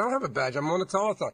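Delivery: ordinary delivery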